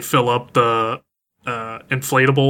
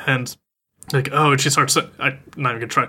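usual speaking voice

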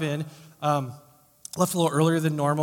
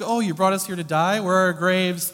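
put-on sarcastic tone; 3 semitones higher than usual. Voicing the people's complaint to Moses: imitating a sarcastic tone. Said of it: "a sarcastic".

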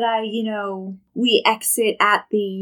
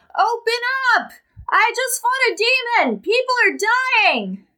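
mock shrill shrieking, pitched way up; 13 semitones higher than usual. Role-playing banging on a door to wake someone after fighting a demon, screaming. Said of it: "another door to bang on and screaming".

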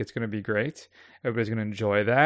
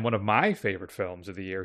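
sarcastic, mocking, insincere delivery; 5 semitones lower, 5 dB quieter than usual. Praising a film in an interview bit: sarcastic. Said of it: "he said sarcastically".

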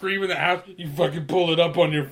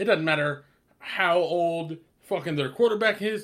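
plain

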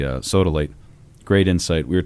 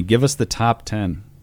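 ordinary delivery

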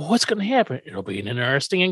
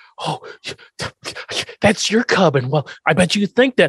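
stumbling, halting stammer, tripping over words; 4 semitones higher than usual. Recapping a scene where Herman faces a roaring bear, imitating Herman stammering. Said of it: "Herman stammers through this like".

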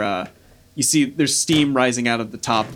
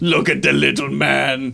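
half-laughing, mocking jeer; 2 semitones higher than usual. Voicing one of the approaching figures with big sticks, kind of laughing mockingly. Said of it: "One of them kind of laughs like".

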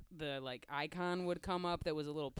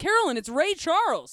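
put-on very high, very loud, shrill top-of-the-lungs child yell; 12 semitones higher, 15 dB louder than usual. Retelling what a five-year-old yelled on the street: imitating a child shouting. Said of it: "top of her voice".

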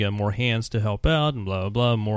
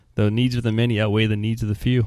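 normal talking voice

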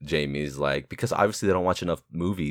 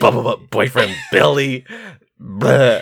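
very loud, high, shrill voice; 7 semitones higher, 9 dB louder than usual. Quoting a movie character's line, hitting each B hard: Pennywise-like voice. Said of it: "You sound like fucking".

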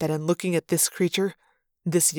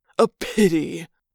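sneering, louder; 4 dB louder than usual. Narrator reading the Yerk's reply to Elfangor: sneering. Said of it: "the Yerk sneered".

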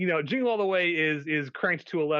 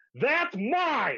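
put-on very high, sudden yelled outburst; 9 semitones higher than usual. Retelling a dash for the last toy in a store: imitating Nancy yelling. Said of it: "to which Nancy yells out".

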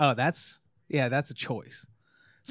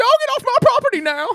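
very high, very loud, shrill squeaky voice; 9 dB louder than usual. Retelling what a man said: imitating a high squeaky voice. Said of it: "a high squeaky voice".

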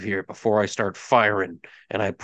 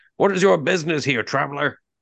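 called-out, projected voice at a higher pitch; 6 semitones higher than usual. Narrator voices one of the armed guards calling out to the travelers: shouting guard. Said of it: "one of them shouts out and says".

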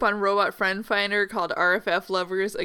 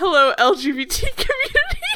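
official corporate cadence, slow with swooping pitch; 9 semitones higher, 7 dB louder than usual. Reading out a company's statement in a corporate greeting cadence. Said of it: "reading that in the same cadence of".

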